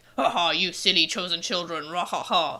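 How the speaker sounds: low, gruff, taunting villain voice with laugh. Describing the voice a character's looks suggest, in a gruff voice. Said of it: "would have this like gruff".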